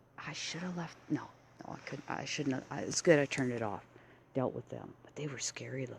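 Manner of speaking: hushed, fast, quiet whisper. Speaker filming around town with the camera turned, whispering. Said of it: "I'm whispering around the town".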